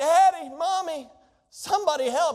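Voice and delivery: put-on child's high, drawn-out hollering. Imitating a child who fell down: imitating a child hollering. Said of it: "we're hollering out".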